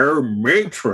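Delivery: camp comedy voice. Doing a comedy catchphrase: Kenneth Williams impression. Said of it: "that's Kenneth Williams".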